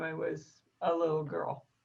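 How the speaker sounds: plain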